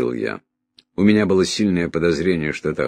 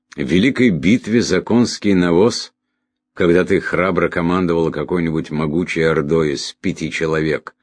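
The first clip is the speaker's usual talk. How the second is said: plain reading voice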